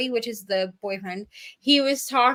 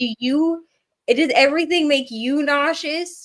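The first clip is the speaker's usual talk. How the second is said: mock, slow, exasperated, fed-up yelling; 3 semitones higher, 4 dB louder than usual. Retelling how a woman yelled at a man, retelling her yelling. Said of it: "she's like yelling at him".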